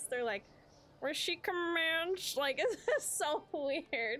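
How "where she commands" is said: mocking nasal voice, higher pitch. Imitating how the reader of a book said a word, in a mocking nasal voice. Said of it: "this nasally voice".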